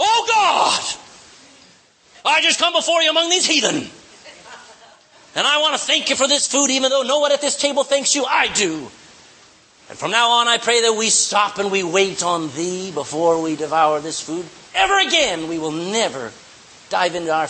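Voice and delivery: big, overblown, grandstanding prayer-style voice. Show how to pray at dinner while everybody is already eating, in the biggest, booming voice. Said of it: "Bow your head in the biggest, boomest voice".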